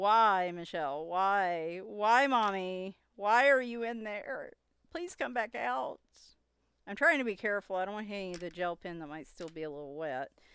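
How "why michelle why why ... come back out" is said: mock wailing, crying, pleading cat cry, drawn-out "why". Retelling how a howling cat cried outside the shower: imitating a crying cat. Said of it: "he was just crying. Like".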